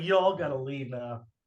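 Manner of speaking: normal talking voice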